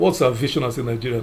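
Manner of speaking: ordinary talk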